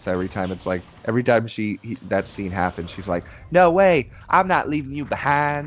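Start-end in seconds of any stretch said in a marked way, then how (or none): 3.5-5.7 put-on loud, high-pitched Southern accent. Quoting the game character Rita's line from a remake scene, Rita's funny Southern accent. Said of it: "She's got a very funny Southern accent".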